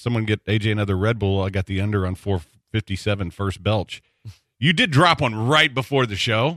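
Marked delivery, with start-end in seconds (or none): none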